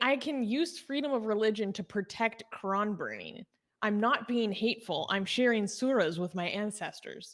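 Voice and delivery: ordinary talk, nothing marked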